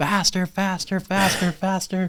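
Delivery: put-on very high, shrill, urgent repeated screaming. Recounting riding with his dad as he did donuts, retelling a scream. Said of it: "and I'm screaming".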